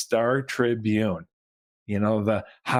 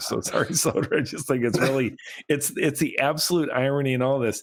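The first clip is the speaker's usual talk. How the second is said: talking through bursts of laughter; 2 semitones higher than usual. Apologizing to Soder for laughing at the irony: laughing while talking. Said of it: "I keep laughing about it too".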